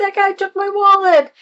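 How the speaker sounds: quick high-pitched yelling.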